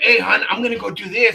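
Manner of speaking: excited, eager tone. Retelling announcing a decision to a partner: imitating own excited self. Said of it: "and I'm all excited".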